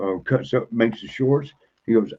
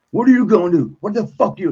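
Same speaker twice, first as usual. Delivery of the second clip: put-on enraged yell, higher and louder; 11 semitones higher, 6 dB louder than usual. Retelling confronting a cop while in a rage: retelling his own enraged yell. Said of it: "I was in a rage at the time".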